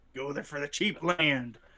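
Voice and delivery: talking like a sea pirate. Talking with friends about a state with cheap land, pirate voice. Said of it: "said that like a pirate".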